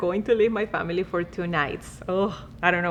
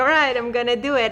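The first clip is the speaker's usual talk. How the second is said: ordinary talk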